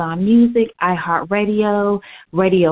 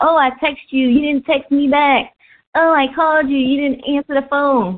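sarcastic, mocking, high-pitched parroting voice; 5 semitones higher than usual. Speaker retelling how people fussed at them; mocking voice imitating people. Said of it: "people would be fussing at me like".

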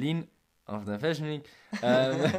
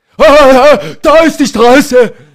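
very loud, high, shrill, furious yell; 12 semitones higher, 24 dB louder than usual. Retelling how an old man on an e-scooter shouted at the speaker on the bike path, retelling an angry shout. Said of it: "Schreit mich an".

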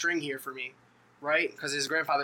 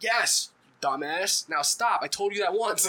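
slow, livid, furious grandfatherly scolding tone; 4 semitones higher, 3 dB louder than usual. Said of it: "his grandfather was livid".

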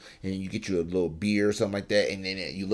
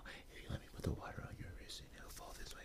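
very quiet, soft, breathy, almost whispered; 20 dB quieter than usual. Speaker describing the apartments.com commercial guy, doing a Dr. Malcolm impression. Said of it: "he talks like this".

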